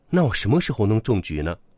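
plain reading voice

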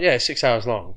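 casual, matter-of-fact voice. Retelling how she answered the speaker's shock, imitating her completely normal tone. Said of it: "completely normal about it".

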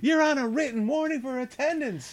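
very high-pitched, nagging voice. Imagining an alarm clock app in Leslie Jones's voice. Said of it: "So Leslie Jones is not a part of this".

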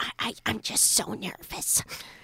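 whispered, very quiet and slow. Retelling what a nervous mother whispered before an interview: imitating mom whispering. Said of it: "whispered at me".

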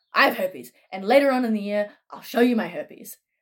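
put-on jolly, cheerful Irish accent. Retelling a microbiology professor's first-day announcement: imitating a jolly Irishman. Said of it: "jolly Irishman just going".

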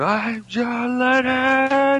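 play-acted scream in a very high register. Recounting what a man did when he stood up; retelling a scream. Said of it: "he just stood up and screamed".

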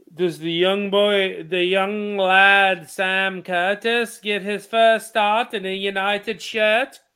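rough, put-on attempt at an Irish accent. Asking the others a question in an attempted Irish accent. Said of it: "you were going for an Irish accent".

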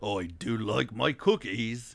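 low-pitched, slow, drawn-out cartoon dad voice. Retelling doing a cartoon dad voice for a daughter: Daddy Pig voice. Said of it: "I would do, like, a, um, Daddy Pig".

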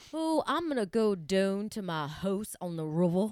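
put-on odd Southern accent from Richmond, Virginia. Speaker imitating how people in Richmond talk, weird Southern accent. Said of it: "they have that weird Southern accent where they say".

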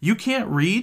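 abrupt, sudden blurt, pitched very high. Narrating a story, one character reacts to another's admission, blurted out. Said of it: "Than blurts out".

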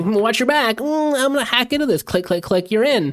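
very high-pitched, geeky tech-guy voice. Describing the usual tech guy in a story: imitating a desk-bound tech guy. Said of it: "behind the desk, twenty miles away, going".

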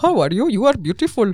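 high, loud, laughing mock Indian accent.

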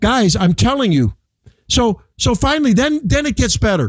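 slow, heated, fed-up, worked-up insistent voice. Speaking to the guys just before a break, worked up and heated. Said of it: "let's give you a chance to cool down a little bit".

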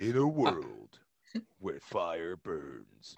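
put-on movie trailer announcer voice. Showing the trailer voice they had tried to do: in a world trailer voice. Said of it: "I was trying to do the In a World".

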